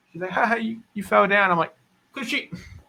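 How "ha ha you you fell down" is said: put-on childlike, pitched-up, laughing, teasing taunt. Retelling how his young daughter laughed when he got hurt: imitating daughter laughing at him. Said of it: "she thought it was funny".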